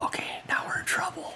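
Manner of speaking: hushed whisper under the breath. Retelling a remark whispered to another person, a retold under-breath whisper. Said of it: "I'm just gonna whisper like over to Grim, kind of under my breath".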